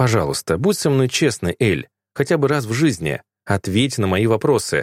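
plain

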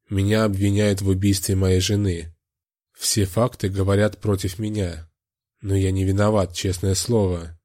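ordinary delivery

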